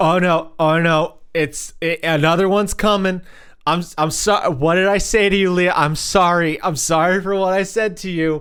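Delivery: panicked, stressed-out, stammering, stumbling voice. Retelling apologizing over and over while too high: imitating own panicked apologizing. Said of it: "stressing out about all of the shit".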